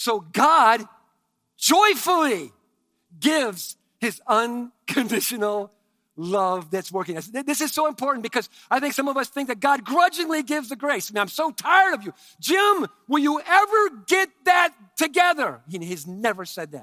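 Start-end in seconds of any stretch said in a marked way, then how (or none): 11.2-15.6 loud, pitched-up, fed-up, worn-out exasperation, acted out. Speaker acting out a grudging God scolding Jim, mock-exasperated. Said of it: "He has never used an exasperated tone with you".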